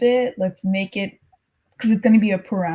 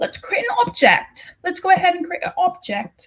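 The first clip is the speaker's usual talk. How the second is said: badly done fake British accent, pitched up; 9 semitones higher than usual. Coding tutor walks through creating an object, in a bad British accent. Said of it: "Was that a bad British accent?".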